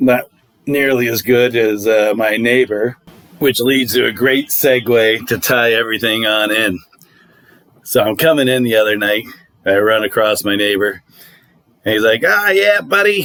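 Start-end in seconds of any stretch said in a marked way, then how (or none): 12.2-13.2 put-on Boston accent, pitched up. Retelling running into a neighbor: put-on Boston accent. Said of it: "He's got this Boston ac-, accent that's great".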